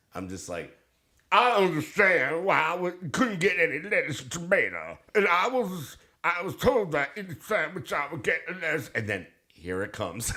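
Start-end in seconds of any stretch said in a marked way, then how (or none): 1.3-8.9 high, strained voice with numb-sounding mouth. Retelling a complaint about a sandwich order, constipated John Travolta voice. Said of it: "John Travolta constipated or John Travolta coming off a massive amount of Novocaine".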